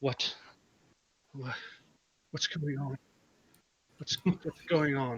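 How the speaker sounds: frightened woman's voice. Game master voicing a woman the players have surrounded, terrified woman. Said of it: "So you have just stepped in front of you have just stepped in front of her as she's still terrified, / you come upon a woman who was doing something at a tree. / Who who are you? Why why why are you h".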